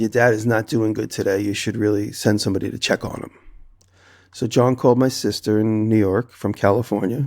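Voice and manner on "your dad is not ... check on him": ordinary talk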